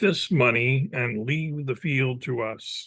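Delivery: ordinary delivery, nothing marked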